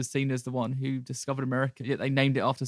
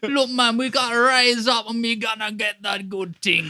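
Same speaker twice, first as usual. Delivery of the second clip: bad put-on Jamaican accent, very high and loud; 9 semitones higher, 7 dB louder than usual. Mocking the accent he put on throughout the entire time, do a bad Jamaican accent. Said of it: "the bad Jamaican accent he put on".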